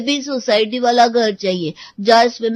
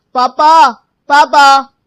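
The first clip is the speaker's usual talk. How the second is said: put-on very loud child hollering voice; 3 semitones higher, 9 dB louder than usual. A child, told to ask dad first, calls out to him: child shouting for dad. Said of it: "शोर क्यों मचा रखा है?".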